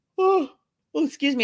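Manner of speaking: talking through a yawn. Chatting with viewers on a live stream at six o'clock, yawning. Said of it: "You see how I'm yawning?".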